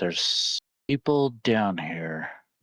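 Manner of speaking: quiet, hushed whisper. In a role-play, the speaker's character tells a companion something, whispering. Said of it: "I whispered to Zara".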